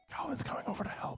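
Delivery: whispered voice. Telling the players someone is coming over to help: whispering. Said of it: "I don't know why I'm whispering".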